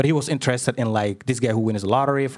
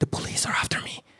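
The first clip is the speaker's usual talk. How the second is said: soft, hushed whisper. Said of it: "Why are you whispering?".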